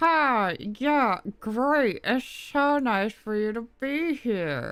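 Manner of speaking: very slow, high speech pushed through the teeth. Describing how a woman talks and imitating her, imitating talking through teeth. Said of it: "it sounds like she's talking through her teeth".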